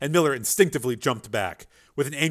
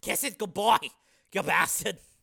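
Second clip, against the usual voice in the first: gasping, grunted out; 6 semitones higher, 6 dB quieter than usual. Narrator reading the banger's line to Miller, grunted out. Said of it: "the banger grunted out".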